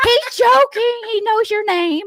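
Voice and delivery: high, loud reassuring chirp. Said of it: "And I'm just like".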